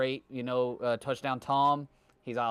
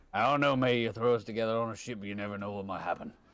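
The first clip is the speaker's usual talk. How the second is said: put-on pirate voice, much lower pitch; 3 semitones lower than usual. Imagining Harley Quinn and Jack Sparrow on a ship, doing a Jack Sparrow impression. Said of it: "Captain Jack Sparrow".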